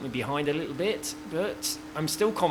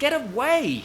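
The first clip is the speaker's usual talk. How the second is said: sudden, shrill, very high shout; 11 semitones higher, 5 dB louder than usual. Recording a YouTube video, the speaker shouts at someone behind them. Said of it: "Sorry for shouting in the microphone".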